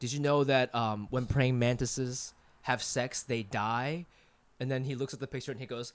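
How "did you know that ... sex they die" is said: play-acted, very quiet, low, hushed, flat deadpan. Retelling what a deadpan guy said about a picture: imitating a deadpan guy. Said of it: "he said it like in his deadpan voice".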